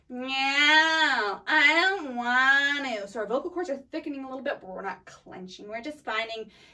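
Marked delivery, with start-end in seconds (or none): 0.2-3.1 loud, whiny nasal brat voice, "ew" drawn out. Coaching a vocal exercise, the speaker demonstrates a whiny bratty nasal voice. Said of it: "Your worst impression of a bratty person".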